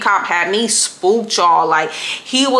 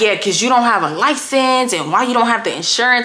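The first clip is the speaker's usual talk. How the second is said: put-on rude tone, faster; 3 semitones higher than usual. Retelling what a dude said back to the speaker, mimicking a rude man. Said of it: "The dude is just being hella rude".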